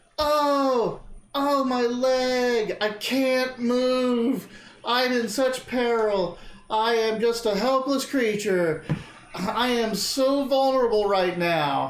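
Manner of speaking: very slow, high, drawn-out fake pained creature squeal. Speaker acting out a helpless creature, imitating a creature in pain. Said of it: "squealing and squawking like, but it's basically like imitating how much in pain".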